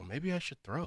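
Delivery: put-on voice in a half whisper. Retelling a talk with a friend about getting in shape: Mackie impression, half whisper. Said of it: "That's your Mackie impression".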